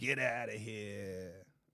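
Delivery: put-on soft Boston accent, drawn out. Asking the other speaker if this is how boston people say it: boston accent. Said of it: "how you guys say that in Boston".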